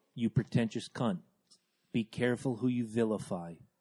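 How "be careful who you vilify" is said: very slow, deliberate, deep, low, hushed, near-murmured delivery. Warning someone in a group conversation, saying it really, really slowly. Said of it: "I'm going to say this really, really slow".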